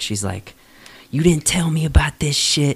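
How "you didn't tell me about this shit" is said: put-on screaming woman's voice, higher. Retelling a wife screaming at her husband in another room: imitating a woman screaming. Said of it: "her screaming back".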